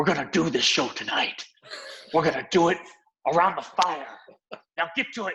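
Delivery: rough, weathered, gristled voice, big theatrical delivery. Speaker recounting a show night around a fire, imitating Johnny Simons's gristled voice. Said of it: "comes out with his gristled voice and his dramatic stance".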